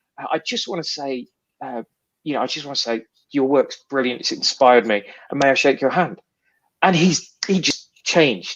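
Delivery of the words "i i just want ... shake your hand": ever-so-polite, over-polite, super British manner. Retelling meeting a comic artist, imitating own super british politeness. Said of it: "you go super British, don't you?".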